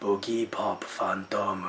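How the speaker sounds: put-on Japanese accent, very low, quiet and hushed. Describing how a title sounds when heard aloud, mimicking it: Japanese accent. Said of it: "hearing a Japanese accent go".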